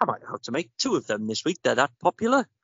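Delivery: put-on old man's voice with West Country accent. Recounting buying a lemon drizzle from an old chap, imitating him in a West Country accent. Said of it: "What a wonderful accent as well".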